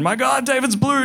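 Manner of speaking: shrill, high-pitched, frantic, panicked scream. Retelling how mom screamed at dad at 3 a.m., retelling mom's panicked scream. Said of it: "Screams at my dad".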